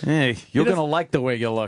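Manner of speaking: menacing, veiled mobster-style voice. Imitating the Men's Wearhouse ad line as a mob boss: imitating a threatening mob boss. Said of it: "He says it like it's a threat".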